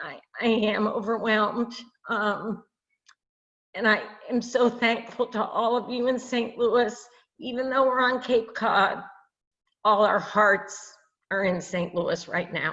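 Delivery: crying through every word, tearful. Speaking from cape cod to people in saint louis, crying while speaking. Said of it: "I can't stop crying".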